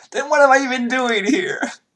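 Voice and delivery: very high, tearful, sobbing crying wail. Narrator voices Evelyn, who starts crying again: Evelyn crying. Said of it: "And she starts crying again".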